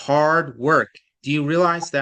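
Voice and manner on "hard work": strong stress on both hard and work. Explaining how to read words like poetry, stressing both hard and work. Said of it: "a strong emphasis on hard and a strong emphasis on work".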